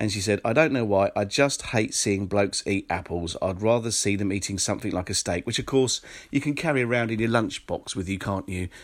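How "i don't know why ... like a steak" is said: normal talking voice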